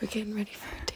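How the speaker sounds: hushed, breathy whisper, close to the mic. Telling viewers about getting ready for a date: whispering. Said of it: "Why are we whispering so much?".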